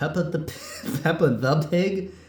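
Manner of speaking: high, laughing, stumbling delivery.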